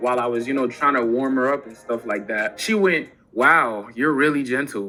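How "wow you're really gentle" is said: usual speaking voice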